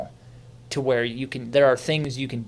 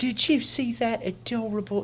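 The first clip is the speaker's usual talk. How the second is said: put-on very high-pitched, slow elderly Southern woman voice; 11 semitones higher, 3 dB quieter than usual. Retelling how old people at church talked about it: old Southern lady accent. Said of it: "That's my old Southern lady accent".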